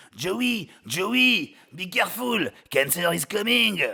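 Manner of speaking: put-on high-pitched French accent. Quoting a friend warning Joey about cancer, Philippe's French accent. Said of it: "with his French accent".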